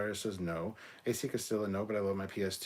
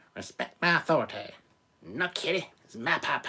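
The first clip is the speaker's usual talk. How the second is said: put-on bad, loud, bratty cartoon-kid voice, belted; 6 semitones higher, 7 dB louder than usual. Someone asks for your best impersonation, so answer with a bad Cartman impression. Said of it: "do your best Cartman impersonation".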